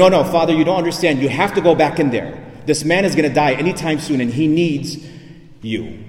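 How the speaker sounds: usual speaking voice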